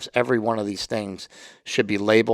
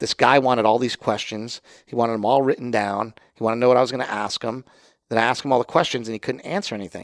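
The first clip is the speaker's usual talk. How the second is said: plain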